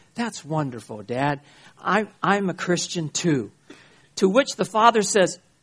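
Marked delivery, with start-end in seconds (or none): 0.1-3.5 very cool, calm, unbothered tone. Retelling a story where a son answers his father; acting out a calm reply. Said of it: "very calmly, very coolly".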